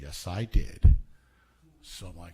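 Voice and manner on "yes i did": mock flat, very low, expressionless deadpan. Retelling how Larry answered his question about a submitted tape, imitating Larry's deadpan reply.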